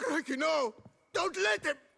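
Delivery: panicked screaming.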